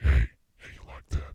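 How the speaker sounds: hushed, quiet, seductive, sexy ASMR murmur. Speaker demonstrates how he would talk to women, in a sexy asmr voice. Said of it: "This is a sexy A S M R voice".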